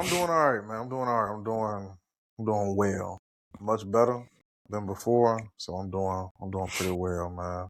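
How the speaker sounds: sad, downbeat, low-energy, low-spirited voice. Answering a question about how they've been feeling, sad. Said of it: "You sound sad".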